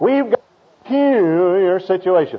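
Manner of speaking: nasal preacher's tone pushed through the nose. Retelling a preacher's words, imitating his nasal tone. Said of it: "he gets a nasal tone in his voice".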